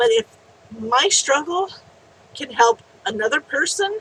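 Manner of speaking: choked-up, close to tears.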